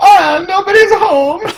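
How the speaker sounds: put-on Italian accent, very high. Speaking to the party at a ruined house: Italian Luigi voice. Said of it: "your Italian Luigi impression just kind of echoes".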